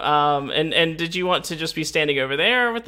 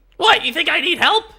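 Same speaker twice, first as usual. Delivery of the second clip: put-on very high, loud, wild crazy old-man voice; 12 semitones higher, 6 dB louder than usual. Voicing a wild crazy old man approached by a character: wild crazy old man voice. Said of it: "he's just this wild, crazy old man".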